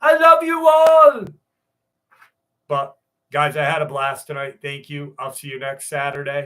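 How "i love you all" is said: very high, very loud, drawn-out, shrill booming shout. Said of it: "I'm gonna do my best [name] impersonation".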